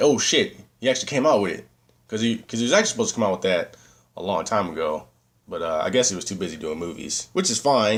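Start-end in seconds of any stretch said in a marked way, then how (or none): none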